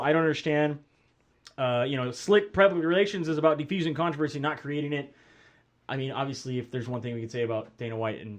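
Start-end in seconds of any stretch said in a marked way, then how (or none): none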